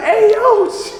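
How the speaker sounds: high, laughing, exasperated pleading tone.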